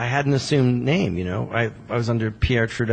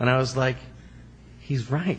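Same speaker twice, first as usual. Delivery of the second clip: ordinary talk, nothing marked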